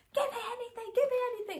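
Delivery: put-on very high, frantic, desperate scream. Retelling begging for anything while in labour pain: retelling own screaming plea. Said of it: "I was literally screaming, like".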